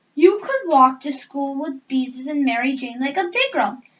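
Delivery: ordinary delivery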